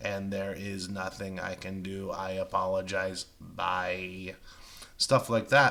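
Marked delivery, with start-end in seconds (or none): 0.0-4.3 emotionless, inflection-free robotic monotone, drawn-out "bye". Imitating poor customer service, flat robotic voice with no inflection. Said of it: "no inflection in the person's tone and they sound like a robot like this".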